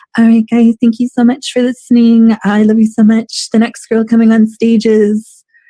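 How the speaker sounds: put-on very high little baby voice. Retelling a performer announcing the next act: imitating a sweet little baby voice. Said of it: "she had this sweet little baby voice".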